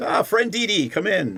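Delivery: friendly dragon creature voice. Voicing a dragonborn who remembers a visitor and greets them: very friendly Rashal greeting. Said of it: "very friendly".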